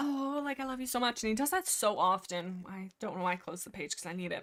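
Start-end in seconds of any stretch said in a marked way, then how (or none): 0.0-1.2 high, swooning, lovestruck gush, acted out. Retelling how the character talks about Spotted Leaf: mock lovestruck voice. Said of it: "so he's being very thirsty for Spotted Leaf".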